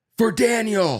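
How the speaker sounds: shrieked, very high-pitched woman's scream. Retelling someone in a speeding car yelling out the window, imitating a woman screaming. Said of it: "And screams out the window".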